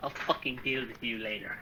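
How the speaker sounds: very quiet, hushed whisper muttered under the breath. Game master voicing a character who looks at a player, whispering under his breath. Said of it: "he whispers under his breath".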